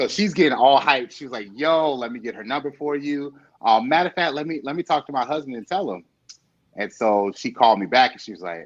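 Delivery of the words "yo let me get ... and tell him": ordinary delivery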